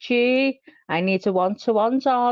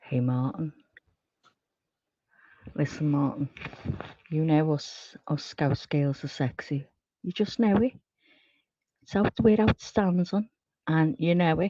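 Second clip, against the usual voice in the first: sexy, seductive voice, quieter; 7 semitones lower, 6 dB quieter than usual. Speaker turns to address a man directly, in a sexy voice. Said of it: "used to hearing my sexy voice".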